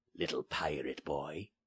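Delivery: low, menacing, threatening growl. A narrator reads a man threatening the little pirate boy, menacing growl. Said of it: "he growled menacingly".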